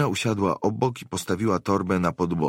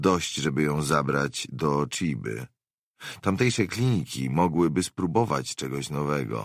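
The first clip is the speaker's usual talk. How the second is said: plain reading voice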